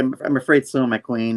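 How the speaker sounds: usual speaking voice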